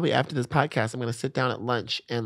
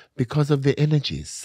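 put-on German accent; 3 semitones higher than usual. Retelling what a forty-year-old man answered when she asked why he hooked up with her; imitating his german accent. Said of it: "in his German accent".

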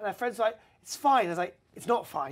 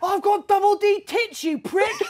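mock screeching rage, very high, very loud, shrill; 13 semitones higher, 8 dB louder than usual. A speaker recalls a woman's reply after he told her to calm down, mock-furious. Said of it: "that made her go absolutely mental".

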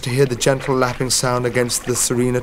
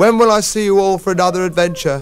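whiny, pleading voice, high and loud; 7 semitones higher, 6 dB louder than usual. Watching his friends depart, he calls after them from the bridge: whining. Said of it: "he whined from the bridge".

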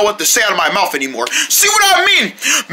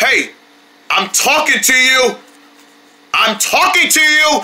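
raised voice, louder and higher; 3 semitones higher than usual. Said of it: "My voice is up".

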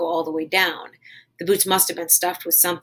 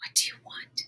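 whispered, much quieter. Connie, barefoot and staring at a man, asks him: whispered. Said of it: "she whispered".

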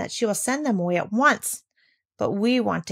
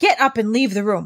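voice half-strangled, choked with anger; 4 dB louder than usual. A narrator reads the lady's reply to the girl's meowing, voice stifled with anger. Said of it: "her voice was almost stifled with anger".

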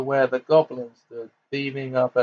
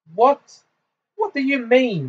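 very high-pitched, frightened cry; 11 semitones higher than usual. She answers a taunting speaker, crying out in fear. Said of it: "she cried".

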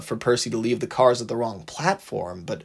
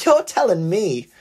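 loud, high, laughing, chuckling voice; 8 semitones higher, 5 dB louder than usual. The little engine answers Thomas, laughing. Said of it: "yucked the little engine".

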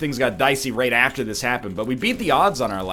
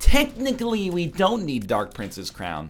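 put-on know-it-all nerd voice, pitched up; 5 semitones higher than usual. Discussing a card game ruling, repeating the point in a nerdy voice. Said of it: "I put on my nerd voice for that".

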